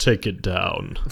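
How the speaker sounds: sudden, very deep put-on voice. Imitating a man whose voice gets deep after sipping red wine: very deep put-on voice. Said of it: "his voice gets really deep, and he's suddenly like".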